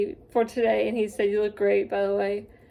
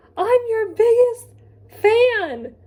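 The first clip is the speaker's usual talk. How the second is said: very high-pitched, loud, drawn-out scream; 13 semitones higher, 7 dB louder than usual. Retelling meeting someone at a table, imitating own scream. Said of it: "I literally screamed".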